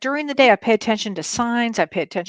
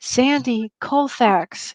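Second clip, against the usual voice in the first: loud theatrical whisper. Retelling his father coming to him: retelling a whisper. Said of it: "he whispers in my ear".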